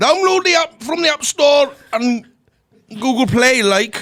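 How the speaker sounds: very high, loud, put-on Geordie accent. Asked by another speaker to give the Glasgow Private Hire details in a Geordie accent. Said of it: "Geordie accent".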